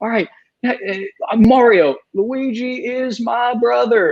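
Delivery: slow, high-pitched, drawn-out voice. Retelling a friend's repeated bit in the Bill Clinton voice. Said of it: "he just kept doing the Bill Clinton voice".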